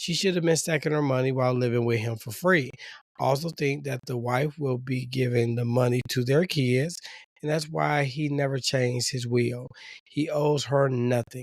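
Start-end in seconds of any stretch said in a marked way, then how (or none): none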